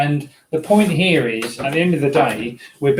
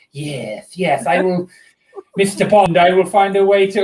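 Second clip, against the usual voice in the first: scheming, evil supervillain voice; 4 semitones higher than usual. Imagining a cat plotting a death: evil mastermind voice. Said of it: "sort of like the evil mastermind thing".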